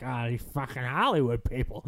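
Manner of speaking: put-on low, drunken narrator voice. Joking about reading an article aloud as an audiobook: Raymond Chandler impression. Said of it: "try to do my best Raymond Chandler impression".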